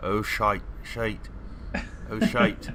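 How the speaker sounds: Scottish accent, spoken slowly. Told to make a perception check, practicing a scottish accent. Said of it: "Practicing that Scottish accent".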